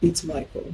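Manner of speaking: warm, deep, sexy morning-radio voice. Retelling a morning phone call from Michael: imitating Michael's sexy morning-man voice. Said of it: "he tried to talk to me in that voice".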